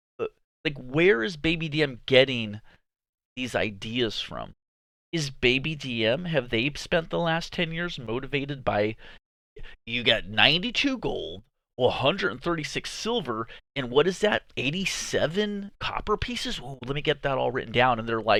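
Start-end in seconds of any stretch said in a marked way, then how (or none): none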